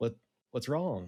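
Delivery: calm, gentle, coaxing, soothing, concerned tone. Approaching two large spiders slowly to calm them: soft voice. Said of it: "speak in a soft voice".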